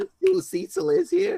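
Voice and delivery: very high, creaky, swooping, wavering voice. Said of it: "With my Woody Allen?".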